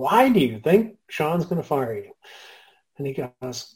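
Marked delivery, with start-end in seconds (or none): 0.0-2.1 put-on Texas accent. Retelling a story, the speaker quotes Tom questioning Peter: Tom's Texas accent. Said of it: "as only Tom can do with his Texas accent".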